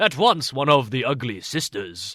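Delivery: ordinary delivery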